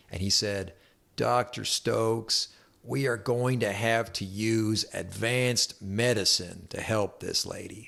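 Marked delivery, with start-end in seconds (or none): 1.1-7.9 put-on really drawn-out, slow southern accent. Retelling what a man said to Doctor Stokes about a patient, in a southern drawl. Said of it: "he said to me in a southern accent, he had this, this real southern drawl".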